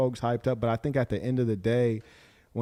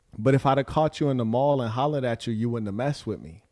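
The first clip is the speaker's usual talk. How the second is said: usual speaking voice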